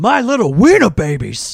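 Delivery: very loud, high-pitched yell, belted out. Quoting a line from a movie: Al Pacino voice. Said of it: "in his, uh, uh, Al Pacino voice".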